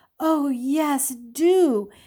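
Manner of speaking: heartfelt, wholly sincere, earnest. A daughter seconds her father's request that a man join their company, earnestly. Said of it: "she said earnestly to Stephen".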